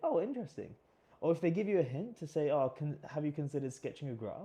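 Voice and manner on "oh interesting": expressive, lively up-and-down swooping intonation. Showing how to react when an interviewer poses a problem: lively inflection. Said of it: "notice that I'm using inflections in my voice".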